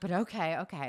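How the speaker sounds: put-on startled, shocked, hesitant older French woman voice. Retelling what a real estate agent said, imitating shocked older french lady. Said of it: "She was like".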